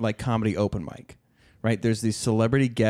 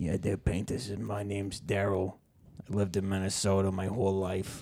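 put-on New York accent; 7 dB quieter than usual. Retelling a comedy character who claims to be from minnesota: imitating a new york accent. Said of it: "the accent mixed with saying".

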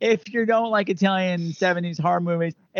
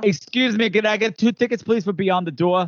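Long Island-accented speech; 2 semitones higher than usual. Joking about saying a film title, ordering tickets in a Long Island accent. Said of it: "my Long Island accent wants to come out".

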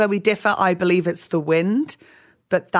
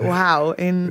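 usual speaking voice

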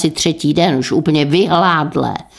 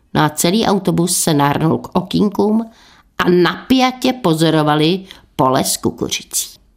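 ordinary delivery

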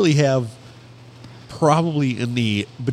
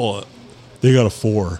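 plain

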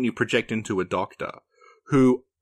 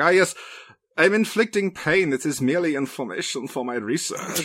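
put-on slight German accent, pitched up; 5 semitones higher than usual. Describing a game's villain and acting out his lines, Voss's mild German accent. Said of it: "has this mild German accent and is like the villain".

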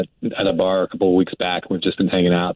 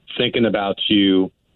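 ordinary talk, nothing marked

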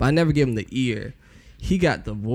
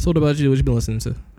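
rushed, rattled off at speed; 3 semitones higher, 3 dB louder than usual. Turning the question over to a co-host, very fast. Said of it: "You said that so fast".

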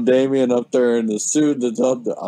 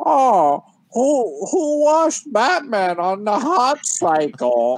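distorted voice, very high, slow, drawn out, mangled; 11 semitones higher than usual. Retelling a scene with Batman on a building's edge: Bane voice. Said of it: "Bane in his fucked up voice is like".

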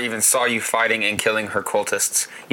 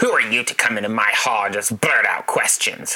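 growling, demanding tone; 2 semitones lower than usual. A woman with an axe demands to know who came into her hall, growling. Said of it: "she growls".

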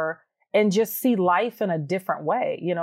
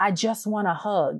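whispered delivery. Retelling a daughter's request for a hug: imitating a whisper. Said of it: "she's whispering to me".

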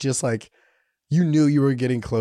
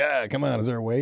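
put-on, jokey, joking tone; 2 semitones higher than usual. Retelling jokingly asking an old lady if there is a wait. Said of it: "I jokingly was like".

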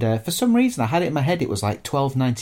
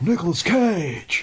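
put-on deep breathy voice, somewhat higher; 5 semitones higher than usual. Showing the others a better version of the impression: Nicolas Cage impression. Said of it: "It's more like that".

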